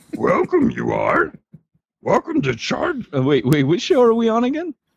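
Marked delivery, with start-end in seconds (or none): 0.2-3.1 sing-song character voice, pitch swooping up and down. Asked by another speaker for a Yoda, welcoming listeners: Yoda voice. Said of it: "Give us your Yoda?".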